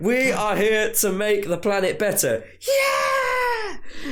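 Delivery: mock rally-speech delivery with cheering.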